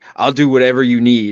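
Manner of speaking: ordinary delivery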